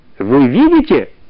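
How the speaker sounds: giggling, tittering, snickering. The chief sage speaks to the other sages about the children; giggling. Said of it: "захихикал главный мудрец".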